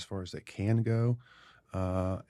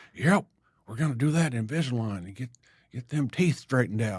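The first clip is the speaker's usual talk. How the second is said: put-on colourful older-person character voice; 4 semitones higher than usual. Retelling what an older patient said one day: impression of an older patient. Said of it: "Brilliant impression".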